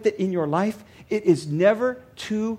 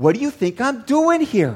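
put-on sarcastic tone. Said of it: "a little bit of sarcasm in me".

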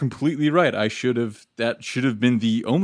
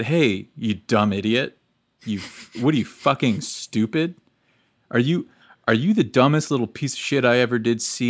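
put-on angry, furious berating tirade. Retelling how she came at him after hearing last week's episode, mock-angry berating. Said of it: "And she came at me with this".

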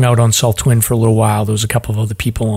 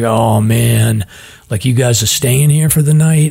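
put-on worried, nervous, uneasy tone. Retelling how the campsite caretaker asked about staying the night: imitating a nervous caretaker. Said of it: "super nervous 'cause he's like".

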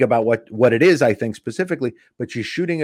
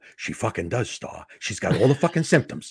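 put-on whisper, much quieter; 7 dB quieter than usual. Retelling a friend's insistence that his girlfriend has Ebola, retelling a whisper. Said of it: "And he's whispering".

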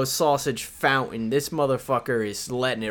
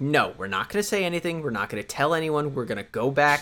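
normal talking voice

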